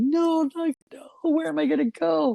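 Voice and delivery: very high, tearful, crying pleading tone. Retelling being pushed out of the house, imitating her own crying plea. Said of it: "I'm crying like".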